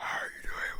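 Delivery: breathy whispered echo trailing behind. Retelling how others echoed a character's greeting: imitating a trailing echo voice. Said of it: "the trailing voice behind her".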